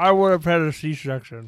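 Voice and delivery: garbled, unintelligible, hard to understand. Answering a question about labor pains, garbled, unintelligible speech. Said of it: "That was not English".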